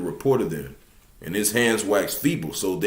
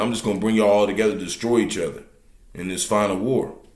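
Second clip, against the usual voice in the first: normal talking voice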